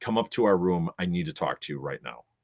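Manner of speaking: plain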